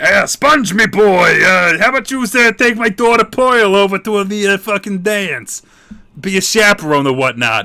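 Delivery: loud cartoon crab voice. Retelling a cartoon episode to listeners, in a Mr. Krabs voice. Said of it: "mister Krabs was like".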